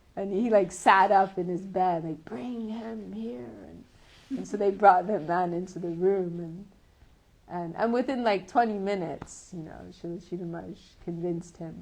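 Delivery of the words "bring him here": frail, weak, soft and quiet voice. Retelling a story, imitating Srila Sridhar Maharaj's weak voice calling for a man.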